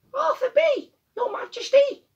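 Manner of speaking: tiny, very high squeaky voice. Narrator reads a young bee answering Queen Bee from the back, small squeaky voice. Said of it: "a little voice from the back squeaked up".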